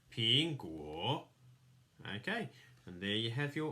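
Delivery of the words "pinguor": pitch dips then rises on guor. Showing the tone mark above the O, falling-rising tone on guor. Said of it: "the falling and rising tone above the O. So it sounds like this".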